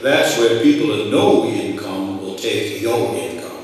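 slow, lazy low drawl. Retelling Howard's warning to the group in the carriage, in Howard's drawl. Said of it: "in his drawl".

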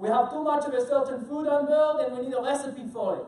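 loud, bad, put-on French accent. Telling a true story, quoting a phone call from Bruno, bad French accent as Bruno. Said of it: "This is my bad French accent".

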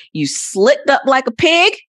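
very high-pitched put-on Texas accent. Chatting with co-hosts, saying a line the texas way: put-on texas accent. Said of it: "Like if we say it from Texas".

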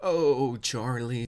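mocking, put-on aroused gushing, fake lustful swooning. Mocking the speaker in a played clip: put-on aroused gushing. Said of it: "sounds like he's nutting in his pants as he's saying this".

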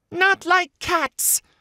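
very high, shrill, impassioned, passionate cry. Reading a story aloud, the mouse crying out: shrill, passionate voice. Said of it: "cried the mouse in a shrill, passionate voice".

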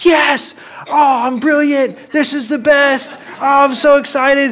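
thrilled, very high, loud, excited voice. Recounting being alone as the kites hit the light, act out talking to yourself really loud. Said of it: "talking to myself really loud".

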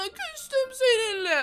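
slow mock sulk with laughter through it.

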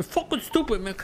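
blunt, jabbing delivery. Imitating a teammate's reaction after being shot: imitating Rami. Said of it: "I know Rami saying".

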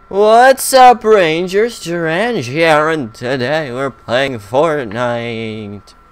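eerie, ghostly voice. Greeting the Rangers to open a Fortnite session, in a ghost voice. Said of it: "why does you sound like a ghost".

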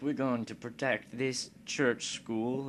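put-on high English accent. Voicing France's position right after Britain's, with a put-on English accent. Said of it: "why am I doing an English accent?".

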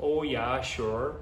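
Minnesota accent with long, drawn-out o's. Speaker born in Rochester, Minnesota, demonstrating how locals supposedly talk, with drawn-out Minnesota O's. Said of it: "the O's get drug out".

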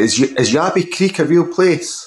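put-on little girl voice with Scottish accent. Quoting their daughter's question to them, little girl Scottish accent. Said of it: "a little girl Scottish accent".

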